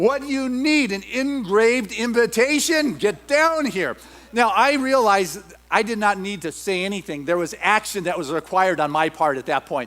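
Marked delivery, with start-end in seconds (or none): 0.0-4.0 mock booming call, slow and high-pitched. Retelling his mom calling him down to dinner the third time, booming mom voice. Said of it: "I'd hear this booming voice".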